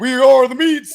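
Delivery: very loud, high, booming commercial announcer voice. Imitating the announcer from an Arby's commercial: Arby's commercial big voice. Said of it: "the dude with the big ass voice".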